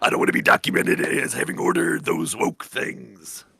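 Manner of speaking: full put-on macho man voice. Doing a generic wrestler bit: Macho Man voice. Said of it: "it's Macho Man voice".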